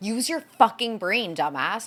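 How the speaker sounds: heated, furious, fired-up angry voice. Venting about a Traitors contestant, heated anger. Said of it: "so heated".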